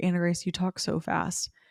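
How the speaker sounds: ordinary talk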